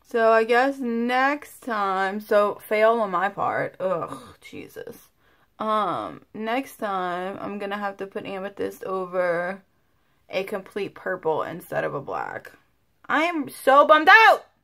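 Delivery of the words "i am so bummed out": very loud, high-pitched, frustrated shout at full blast. Talking to viewers after a paint color came out wrong: yelling. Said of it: "I didn't mean to like, yell at you guys".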